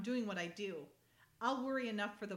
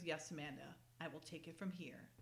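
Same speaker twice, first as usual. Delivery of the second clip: put-on condescending, lower, quieter, slower voice; 5 semitones lower, 10 dB quieter than usual. Recapping a tv episode, speaker acts out a man answering amanda, mock-condescending tone. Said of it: "You don't have to be so condescending".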